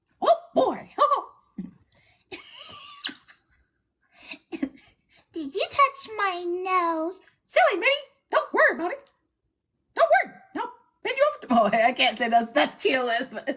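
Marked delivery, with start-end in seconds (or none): 0.2-11.7 squeaky, high and bouncy voice. Asked for a Mickey Mouse impression, the speaker performs one: Mickey Mouse impression. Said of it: "You got to give us your Mickey Mouse impression".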